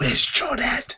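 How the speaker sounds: shouted whisper. Retelling calling out to Tyrone as he goes by, in a shouted whisper. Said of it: "kind of in a shouted whisper".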